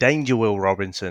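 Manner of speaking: ordinary delivery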